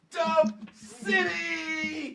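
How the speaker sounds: very high cheer with 'City' stretched out. Impersonating a player close to the microphone after a win: Fred Warner impression. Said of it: "I'm gonna do my best Fred Warner impersonation".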